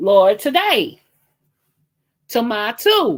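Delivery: heated, agitated, worked-up outburst with swooping pitch. Talking to viewers about stupid behaviour, worked up and agitated. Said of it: "let me calm down".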